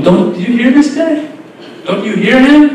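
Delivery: put-on high, funny-sounding mocking laugh. Retelling how Fir'aun spoke to those around him, Fir'aun's mock-laughing tone. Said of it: "with a funny laughing tone".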